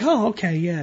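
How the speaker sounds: put-on pandering voice. Retelling how a parent answers a seven-year-old's big dream, mock pandering teacher sound. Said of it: "that pathetic pandering sound that school teachers make".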